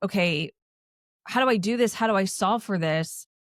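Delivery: ordinary delivery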